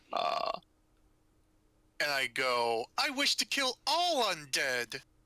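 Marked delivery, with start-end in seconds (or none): 3.0-5.0 very high, animated, swooping put-on voice. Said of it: "she's startled at the change of voice".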